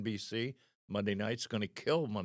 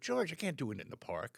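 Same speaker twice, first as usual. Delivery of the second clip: pitched-up salesman-style patter; 5 semitones higher than usual. Retelling what you told a fan in a park: like a salesman. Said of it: "like a salesman".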